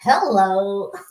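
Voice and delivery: put-on American accent. Answering another speaker's hello, in a put-on american accent. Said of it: "I've gotta put on a, a, a, an American accent".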